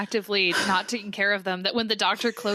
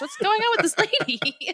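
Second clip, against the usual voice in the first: ordinary delivery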